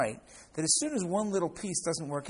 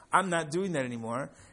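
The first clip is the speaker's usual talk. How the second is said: usual speaking voice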